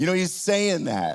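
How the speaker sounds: normal talking voice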